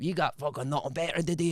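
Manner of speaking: rough-sounding, put-on Scottish accent. Recounting what someone shouted during a phone call, acting out his reply in the caller's voice, in an imitated scottish accent. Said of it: "giving it back in his own accent".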